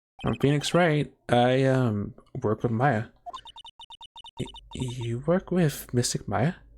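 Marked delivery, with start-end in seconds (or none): 4.4-6.5 put-on younger-sounding, youthful voice. Acting out a scene, answering another character in a younger voice. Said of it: "maybe like a younger voice".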